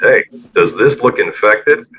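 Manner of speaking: deep, loud, sultry, seductive, sexy voice. Showing why it doesn't work, the speaker tries a line in a sexy deep voice. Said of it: "in a sexy deep voice".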